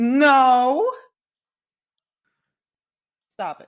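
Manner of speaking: very loud, high, flustered protest, drawn-out no. Playing a character who looks away from the others: flustered. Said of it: "looks away, flustered".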